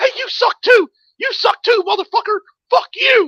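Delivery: very high, loud, furious yelling.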